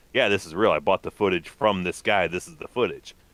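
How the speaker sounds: normal talking voice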